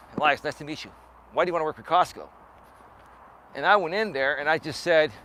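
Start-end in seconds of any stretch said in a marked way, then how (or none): 0.2-2.3 soldierly, military-style delivery. Retelling a job interview, the interviewer speaking: imitating a military-style voice. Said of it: "military style".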